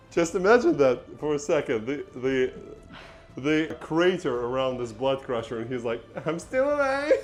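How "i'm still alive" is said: very high, extremely annoying put-on voice. Imagining the blood crusher in the crater, giving him an annoying voice. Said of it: "The most annoying voice ever".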